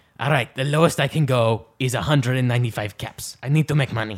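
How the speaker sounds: fake accent drifting between French and Spanish. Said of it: "I fluctuate between France and Spain".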